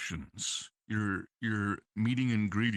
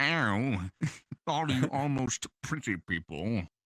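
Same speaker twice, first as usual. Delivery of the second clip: punchably smug, snotty, drawn-out, self-important voice; 3 semitones higher than usual. Showing a first line in a snotty, obnoxious, self-important voice. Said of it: "One of the first lines literally is".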